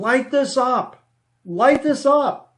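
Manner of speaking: shrill, very high, drawn-out screaming. Retelling a man who came in screaming at the team, imitating someone screaming. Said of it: "he's literally screaming".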